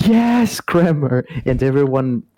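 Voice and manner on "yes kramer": high, excited, triumphant cheering yell. Recalling jumping out of his seat at the rally: retelling own yell. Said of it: "I jumped out of my seat and and yelled".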